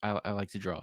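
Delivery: soft, flat, level, expressionless monotone. Describing how a woman answered a question, imitating a flat monotone. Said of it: "she spoke in a very monotone way".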